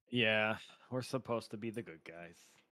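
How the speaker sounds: disappointed, let-down tone. D&D player agreeing the group should try peace first, sounding disappointed. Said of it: "You sound so disappointed".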